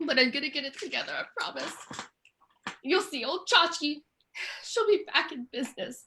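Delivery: soft, put-on, acted emotional delivery. Promising the shop will be back in business, acting emotional. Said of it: "I'm a little emotional".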